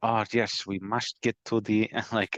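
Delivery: put-on German accent. Describing how a character spoke, imitating his German accent. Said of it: "I felt like he was trying to do a German accent".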